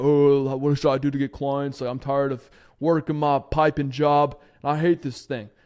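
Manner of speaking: put-on big-guy deep bass voice. Retelling what a big blue-collar guy asked about getting clients, imitating a deep voice. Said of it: "he had a deep voice, like".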